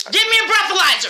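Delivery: furious, loud, angry shouting. A woman confronting police on Thanksgiving, angry yelling. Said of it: "Stop yelling at me".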